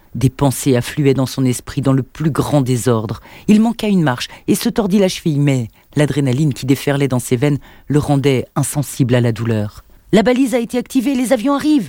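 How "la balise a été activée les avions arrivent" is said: very high-pitched, shrill, urgent shout. Narrator reads a character bursting into the arsenal, yelled.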